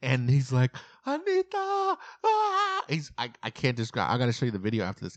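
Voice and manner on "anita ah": play-acted, very high-pitched, top-of-lungs scream. Retelling a man running down a beach to a woman, imitating his top-of-lungs scream. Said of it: "He's screaming at the top of his lungs".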